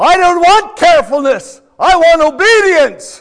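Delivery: shrill, very high, very loud hollering voice. Retelling a mother hollering back at her son about the painted railing: hollering. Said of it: "she hollers out".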